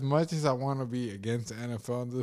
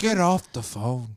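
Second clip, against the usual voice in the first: mock, put-on Irish accent; 4 dB louder than usual. Mocking a guy on Twitter who posts basic advice, in a mock Irish accent. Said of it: "That was Irish".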